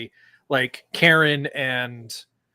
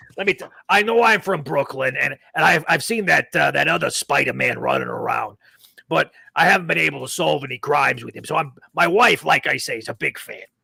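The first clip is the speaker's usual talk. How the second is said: put-on old detective voice. Improvising Columbo talking to Spider-Man: Columbo voice. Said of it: "kind of Columbo style".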